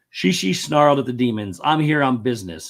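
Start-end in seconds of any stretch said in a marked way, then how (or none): none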